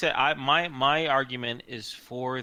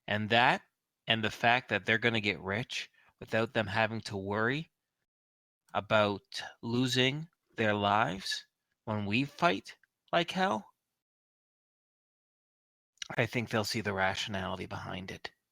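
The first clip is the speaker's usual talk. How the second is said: speaking through clenched teeth; 2 semitones lower than usual. Role-play player voicing Xavier to the group, speaking through gritted teeth. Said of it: "through gritted teeth".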